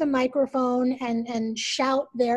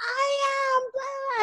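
mock, very high screamed stage voice; 13 semitones higher than usual. Describing women taking the mic on stage, retelling women screaming. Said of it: "they're screaming".

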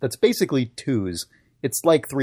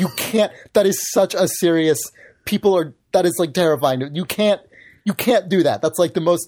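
put-on angry voice, higher pitch; 6 semitones higher, 3 dB louder than usual. Retelling how a friend's mom scolded them after a prank call: imitating an angry mom. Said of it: "she got so mad".

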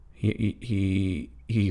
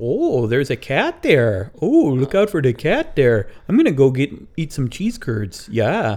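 put-on high, loud traditional Wisconsin accent. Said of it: "some of 'em have the traditional accent".

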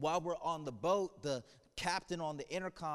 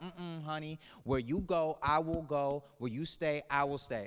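put-on sassy South Bronx accent, full of attitude; 3 dB louder than usual. Acting out Ruth's vow as a girl from the South Bronx: imitating a sassy South Bronx girl. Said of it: "I picture a girl from the South Bronx with some attitude".

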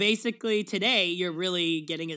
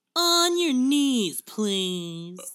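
very slow, loud, higher-pitched, each word drawn out; 5 semitones higher, 6 dB louder than usual. Joking about someone, doing a Bill Maher impression. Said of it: "That's my impression of, of Bill Maher".

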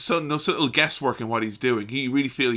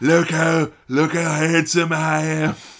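loud, slow, ugly, drawn-out pig-demon voice; 4 semitones higher, 7 dB louder than usual. Describing a wrestler's looks, then imitating his voice: Steve Austin's pig demon voice. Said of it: "the voice of a fucking pig demon".

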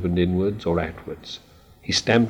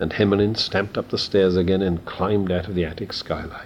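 plain reading voice

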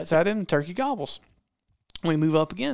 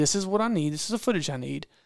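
normal talking voice

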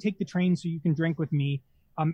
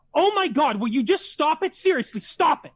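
high, screamed outburst; 9 semitones higher, 4 dB louder than usual. Speaker recounting a woman flipping out in a restaurant, imitating her screaming. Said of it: "She screams".

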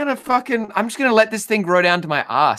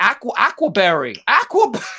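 bad, horrible, put-on fake English accent; 3 semitones higher than usual. Laughing with friends, quoting what a man says: horrible english accent. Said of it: "Your English accent is fucking horrible".

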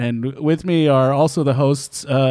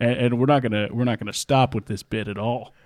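pitched-down low voice. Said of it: "Are you still doing a lower voice?".

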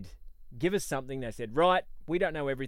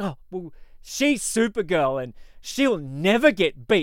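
play-acted high, very loud, petulant defensive outburst; 5 semitones higher, 8 dB louder than usual. Describing how Alex reacted to talk of Supergirl losing: mock-defensive Alex impression. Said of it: "Alex got all like defensive".

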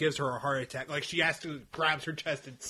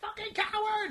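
put-on, very high, furious, angry yell; 4 dB quieter than usual. Retelling a fight scene from a book: imitating McGonagall shouting. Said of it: "McGonagall's like".

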